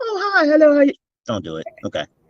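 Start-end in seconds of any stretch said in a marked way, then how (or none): 0.0-0.9 very high, innocent, butter-wouldn't-melt voice. Warning listeners about the guest who seems harmless: imitating Shanier's innocent greeting. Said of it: "she's gonna be all".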